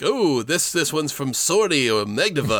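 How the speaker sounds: put-on New Yorker accent. Recalling a salesman at a mall, Simpsons salesman New Yorker voice. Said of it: "definitely that kind of New Yorker voice".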